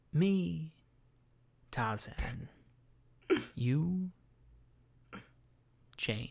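very slow, deliberate delivery, each word laid down. Taking a turn at impressions, the speaker does Anthony Hopkins as Tarzan. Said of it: "This is my Anthony Hopkins as Tarzan".

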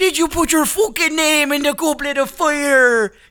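very high, loud put-on Scottish accent, fire drawn out. Quoting the Goblet of Fire line the way they hear it, Scottish accent. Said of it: "I don't remember there being a Scott".

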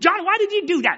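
acted, very high, snappish, scolding tone. Quoting a preacher on a wife scolding her husband: imitating a snappy scolding. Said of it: "Just as snappy as can be".

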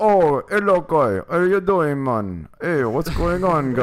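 male voice, full Jamaican accent. Speaker trying out voices, asked for the Jamaican man, Jamaican man voice. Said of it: "The Jamaican man".

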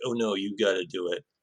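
put-on macho voice. Showing how a racer did not sound: imitating a macho tone. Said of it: "trying to be macho".

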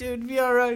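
high, soothing, reassuring voice. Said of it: "I'm like".

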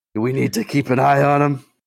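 deliberate loud stage whisper. Asking another character whether to keep an eye on him: on-purpose stage whisper. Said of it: "this is definitely an on-purpose stage whisper".

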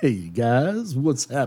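low, put-on radio DJ voice. Imagining what the man says now, in an imagined new voice for him. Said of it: "this is what I imagine their voices being".

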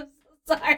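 laughing while talking. Apologizing while unable to stop laughing: laughing while talking. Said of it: "I can't stop laughing".

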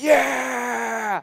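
long, high, drawn-out excited, proud "yeah". Recounting her winning first place, retelling a yell. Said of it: "and I'm yelling".

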